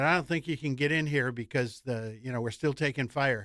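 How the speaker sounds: normal talking voice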